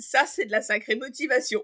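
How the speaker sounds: laughing out loud.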